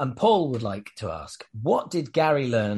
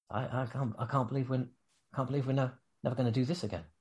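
put-on mutter under the breath, quieter; 8 dB quieter than usual. Retelling what a best friend said leaving a show: muttering under his breath. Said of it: "he just kinda says under his breath".

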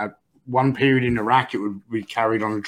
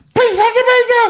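put-on very high, very loud, shrill young girl voice; 8 dB louder than usual. Retelling speaking up to the sergeant major in the cold, like a 10-year-old girl. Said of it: "I start talking like a 10-year-old girl".

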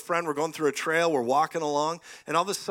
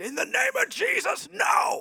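put-on very high, deliberate, drawn-out shout. Retelling facing down a charging dog, retelling own yell. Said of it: "Like that, I yelled".

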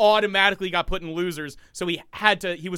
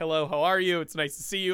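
put-on unassuming, polite voice; 4 dB quieter than usual. Imitating a fighting game player greeting people: imitating Daigo's unassuming manner. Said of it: "he's just an unassuming guy".

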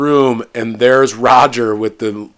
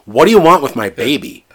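put-on, mock-fearful frightened voice; 2 semitones higher than usual. Retelling a movie scene and quoting an actress's line, imitating a frightened voice. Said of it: "real fear in her voice".

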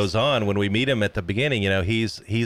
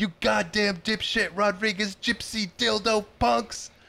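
high, mild mock shout. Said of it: "when he's standing outside the car shouting, he's like".

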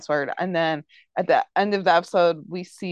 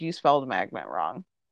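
mock deadpan, much lower and quieter; 7 semitones lower, 4 dB quieter than usual. Recapping an episode, retelling a character's comeback, as a retold deadpan reply. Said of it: "she just like kind of deadpans".

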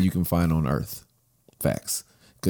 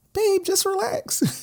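very high, swooping cartoon-character voice. Quoting what she tells him, with her listening: cartoon-character impression of her. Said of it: "You made me sound like a cartoon character".

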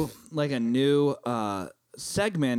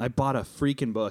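plain

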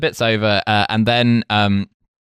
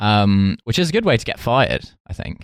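usual speaking voice

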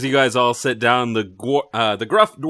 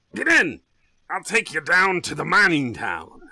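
put-on barking old dwarf voice; 5 semitones higher than usual. Voicing an old dwarf telling the party to get in the cart: barking old dwarf. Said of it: "he barks".

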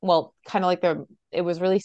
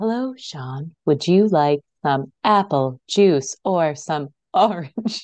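slow female robot voice; 4 dB louder than usual. Joking about hearing the recording back, the speaker imitates a voice: robot lady voice. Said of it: "it's that robot lady".

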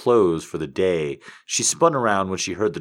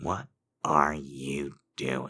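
very quiet, calm, low, terrifying menace; 5 semitones lower, 9 dB quieter than usual. [name], standing in the doorway, speaks to his employee Kevin: calm yet terrifying. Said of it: "[name] said in a calm yet somewhat terrifying voice".

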